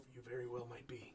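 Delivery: soft, half-spoken musing, almost to himself. Voicing a character who ponders a priest's claim: saying it almost to himself. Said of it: "almost to himself".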